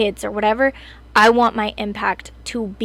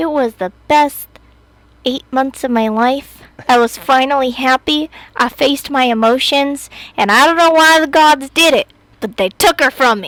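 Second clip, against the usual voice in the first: loud, overblown, mock-sincere sarcastic delivery; 4 semitones higher, 7 dB louder than usual. Answering a partner's question about a future obituary, sarcastic. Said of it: "so my sarcastic answer first".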